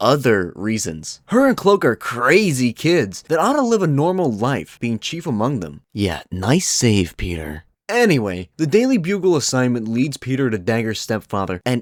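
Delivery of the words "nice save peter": whispering, lower and slower. Recapping Peter's story, the speaker adds a remark in a whisper.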